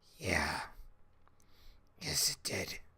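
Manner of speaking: barely audible, very quiet, breathy whisper. Voicing a character kneeling in anger who answers an inner voice: whispering. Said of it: "Lucha whispers".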